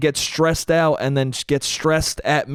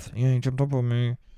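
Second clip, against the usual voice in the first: put-on under-breath mutter, quieter; 3 semitones lower, 4 dB quieter than usual. Retelling what a man's upset girlfriend said after the dog jumped on her: imitating someone muttering under her breath. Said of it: "under her breath".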